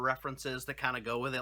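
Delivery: ordinary delivery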